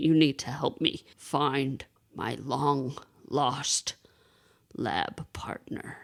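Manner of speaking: calm, unhurried robotic voice. Retelling a child playing Transformers, imitating his Optimus Prime voice. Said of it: "he does this cool voice when he's Optimus Prime".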